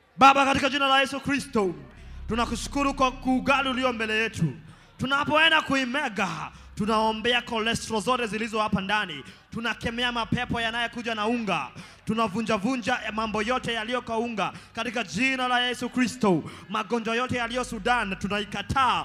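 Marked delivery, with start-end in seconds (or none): none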